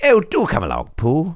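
high, very English storybook owl voice. Voice actor showing off the role they play, Owl from Winnie the Pooh voice. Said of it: "I'm the owl in Winnie the Pooh".

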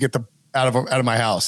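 mock grave, dead serious, no-joking delivery. Retelling him ordering the group out of his house: imitating someone dead serious. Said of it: "he was, like, dead serious".

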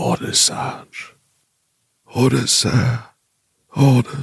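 hushed whisper. Voicing soldiers in a trench who whisper for orders: whispering. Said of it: "a whisper echoes through them".

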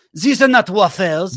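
mock French-like Belgian accent. Imitating a Belgian complaining at a Waffle House: put-on Belgian accent. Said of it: "I feel like it's kinda French adjacent".

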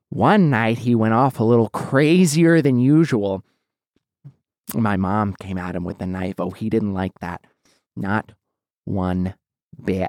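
very low, crazed lunatic clown voice. Doing impressions for others, telling a story in a Joker impression. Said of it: "I do a good Joker impression".

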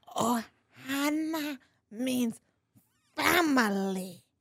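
animated cartoon alien creature voice. Trying the impression again after being coached: Stitch voice. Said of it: "do Stitch".

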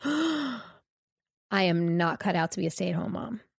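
mock breathless gasping. Retelling a sudden realization while sitting with the kids: retelling a breathless gasp. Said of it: "my breath got taken away".

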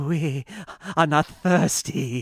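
very slow, menacing put-on German accent. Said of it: "And he says".

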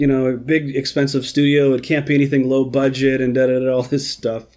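ordinary talk

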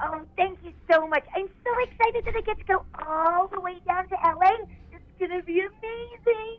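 very high, thrilled, excited character voice. Answering a request to put the character on the phone: voicing the character Bev. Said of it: "That was Bev".

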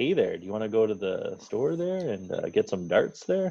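gentle, laid-back voice. Told to make it more laid back, the speaker tries again, gentle and laid-back. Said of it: "Maybe more gentle".

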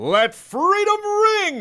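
put-on superhero battle cry, very high and booming. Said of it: "I'm going to do his freedom. The thing I hear every 20 or so seconds when Cap shouts it out".

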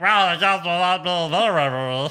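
high helium squeak, very slow, stretched "of". Joking that Akam inhaled helium, imitating him: Akam helium voice. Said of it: "He inhaled helium".

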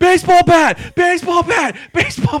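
very high, very loud shriek, cut off. Retelling watching someone play a game: retelling a scream. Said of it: "I'm at the edge of the bed screaming".

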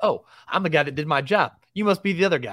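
put-on condescending voice with Boston accent. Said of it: "he's like".

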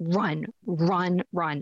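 frightened, desperate, scared, urgent voice. Retelling what mom kept saying in her sleep, imitating a desperate, scared voice. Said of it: "in this kind of desperate, scared voice".

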